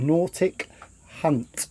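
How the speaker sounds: slow, careful, deliberate, word by word. Naming a person whose name must not be said quickly: 'Nautic Hunt' slowly. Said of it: "We have to say his name slowly".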